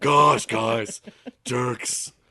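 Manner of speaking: very loud, high, aggressive holler. Imitating a friend's inner monologue: imitating Jason. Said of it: "that's my best Jason".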